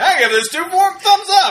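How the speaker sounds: very high-pitched put-on voice, uncertain. Trying to imitate Gene Shalit giving a rating: Gene Shalit impression. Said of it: "I kept trying to remember what he sounds like".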